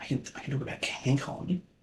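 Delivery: hushed whisper. Speaking alone, about to bring up an event, whispering. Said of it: "I don't know why I'm whispering".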